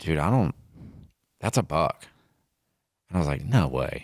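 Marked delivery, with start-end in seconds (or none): 0.0-2.0 put-on hushed whisper. Telling a hunting story, the speaker repeats his companion's remark, acting out a whisper. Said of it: "Jacob like whispers like".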